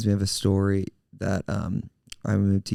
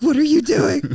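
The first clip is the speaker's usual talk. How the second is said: high, loud, shocked outburst. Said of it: "And I was like".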